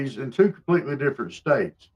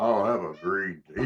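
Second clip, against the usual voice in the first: put-on manly voice, much lower, quieter; 7 semitones lower, 8 dB quieter than usual. Acting out how he tried to say it manly, trying to sound manly. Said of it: "He tried to say it manly".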